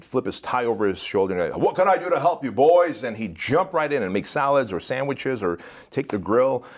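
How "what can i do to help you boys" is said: big, loud, bellowing Southern voice. Speaker retells Doug coming in to help the cooks, in Doug's bellowing southern voice. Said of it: "in his big bellowing southern voice".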